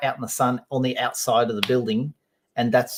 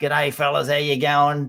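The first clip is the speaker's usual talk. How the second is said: broad bush Australian accent, laid on thick; 3 semitones higher than usual. Speaker explaining australian accents, demonstrating a broad ocker australian accent. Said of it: "It's it's called a broad accent".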